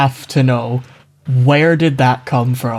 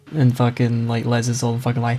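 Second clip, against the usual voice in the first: ordinary delivery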